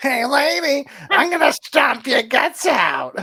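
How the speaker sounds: very high, slow, squealing, squeaky brute voice. Acting out the comic's giant brute: high-pitched squealing giant voice. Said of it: "his voice, like, having, like, a high pitch, like, almost a squeal".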